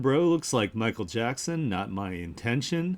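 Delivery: ordinary delivery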